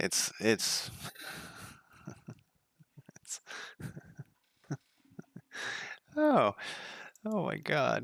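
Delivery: whispered, breathy, laughing through the words. Reacting to something ridiculous on screen, laughing while talking. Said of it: "I'm laughing".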